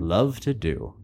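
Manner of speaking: voice dying away, fading out at the end. Showing how they like to say the phrase, fading out. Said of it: "I really like to fade out as I say that".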